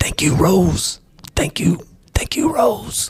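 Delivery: hushed, breathy whisper, barely voiced. Doing the movie scene where Jack pulls Rose in, whispering like Jack. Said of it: "because Leo always whispers".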